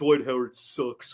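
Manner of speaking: very low, deep put-on voice. Reading an ad line aloud while pretending to be Shaq: Shaq voice. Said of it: "I'm gonna read this like I'm Shaq".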